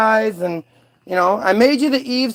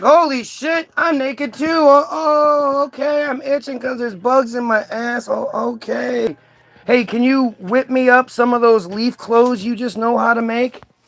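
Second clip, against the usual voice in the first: chatty, quick, rattled-off storytelling voice. Acting out a comic Bible story, voicing Adam. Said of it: "He's like".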